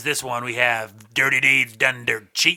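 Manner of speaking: loud, slow, booming rock radio DJ voice. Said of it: "you have the classic rock radio voice".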